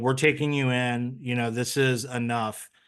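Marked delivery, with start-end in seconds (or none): none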